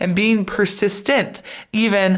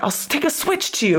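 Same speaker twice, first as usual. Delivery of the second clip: acted-out mock-threatening tone, much higher pitched; 6 semitones higher than usual. Retelling a man barking at a woman to go home, mock-threatening. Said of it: "like he was threatening".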